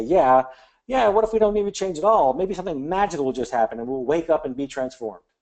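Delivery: dry, teasing, playful sarcasm, acted out. Quoting someone brighter at the table: imitating a sarcastic remark. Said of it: "be sarcastic even and say".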